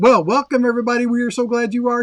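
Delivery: rushed, loud, high-pitched. Host welcoming everybody to the show, talking fast. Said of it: "Why am I talking so fast?".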